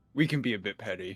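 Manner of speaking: hushed half-whisper, said in passing. A player's character passes a frustrated man and speaks to him, half-whispering. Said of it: "I just whisper to him".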